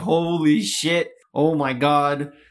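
very slow, drawn-out, stunned, mind-blown freak-out. Retelling how the other speaker just went off: imitating someone freaking out. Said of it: "You really just went off right there".

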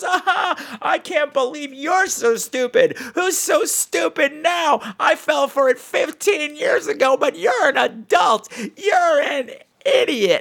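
very high, loud, mocking, taunting shout.

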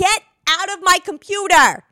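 acted-out high, frustrated, fed-up screaming fit. Speaker pictures the other person in bed, screaming at the computer; mock screaming. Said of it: "screaming at the computer".

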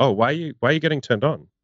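acted matter-of-fact voice. Describing teasing a partner in bed, the speaker acts out the line: mock matter-of-fact. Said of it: "do it in a matter of fact way".

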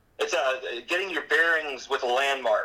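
bearings stressed and drawn out. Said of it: "Emphasis on bearings".

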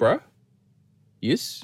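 New Zealand bloke accent. Showing how a Kiwi bro talks compared to an Australian bro: New Zealand accent. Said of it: "Kiwi bro is like".

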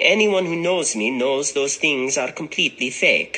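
put-on Italian accent. Reading a model's quoted words about being smeared: Italian accent as Ambra Gutierrez. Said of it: "the Italian accent when he's talking about Ambra Gutierrez".

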